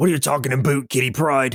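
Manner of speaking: put-on Canadian accent. Joking about a cartoon episode, doing Wolverine with a Canadian accent. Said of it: "Wolverine to have a Canadian accent".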